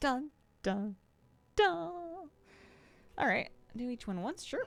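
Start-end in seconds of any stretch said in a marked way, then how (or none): 0.0-2.3 high, overdramatic suspense sting voice. Going through a Google Doc, saying dun dun dun in a really dramatic voice. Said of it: "I like saying dun dun in a really dramatic voice".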